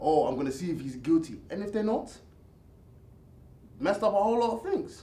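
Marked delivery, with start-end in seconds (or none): none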